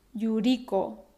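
Yuriko, stress on second-to-last syllable ri. Tip for saying Japanese names in Spanish: stress on second-to-last syllable ri. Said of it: "poner el acento en la penúltima sílaba. Algunos ejemplos".

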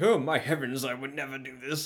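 put-on loud, overdone, hammy old man voice. Retelling a game tape, imitating a hammy old man. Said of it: "Some guy who's probably, like, in his seventies being like".

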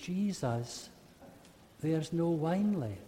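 quiet, timid, reverent, worried, fearful murmur. Retelling the wedding at Cana as Mary speaking: acting quiet, pious, fearful. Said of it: "Does she say it quietly, piously, fearfully?".

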